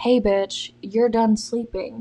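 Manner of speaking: put-on voice speaking as a dog. Retelling being woken by a big dog standing on her: voicing the dog's imagined words. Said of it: "This big fifty fucking pound dog decided".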